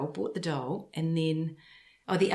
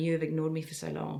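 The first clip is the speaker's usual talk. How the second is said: usual speaking voice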